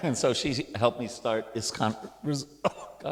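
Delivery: voice catching with emotion. Describing a mentor who helped start a program: choked up with emotion. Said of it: "I'm all choked up".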